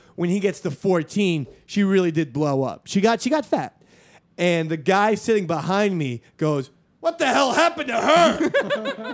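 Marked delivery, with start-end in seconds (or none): 7.0-9.2 acted shrill, very high, loud, drawn-out blurt. Retelling what a person sitting behind said in the cinema: imitating a loud moviegoer. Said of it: "He said it so loudly".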